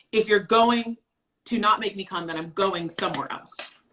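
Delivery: ordinary talk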